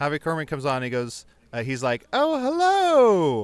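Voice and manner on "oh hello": very high, raised, drawn-out voice. Retelling how Harvey Korman greets the family: Mrs. Doubtfire voice. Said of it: "That was very Missus Doubtfire".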